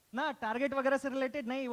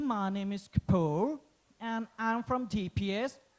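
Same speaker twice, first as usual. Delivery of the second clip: slow, careful, proper put-on English accent. Job candidate introducing himself to the manager at an interview, proper accent. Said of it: "Proper accent में".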